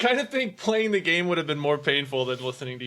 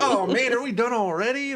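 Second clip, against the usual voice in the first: put-on, high, keyed-up eager excitement; 7 semitones higher than usual. Replaying own earlier question to the others: re-enacting own excited question. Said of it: "I don't know if you could tell my tone".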